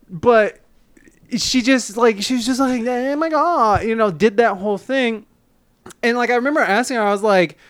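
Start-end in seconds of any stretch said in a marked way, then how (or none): 2.2-3.8 terrible put-on ditzy girl voice, much higher. Telling about a woman, the speaker imitates her: terrible dumb blonde girl impression. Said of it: "that's a terrible impression of, like, a dumb blonde girl".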